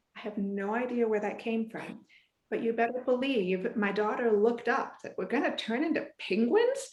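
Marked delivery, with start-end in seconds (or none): none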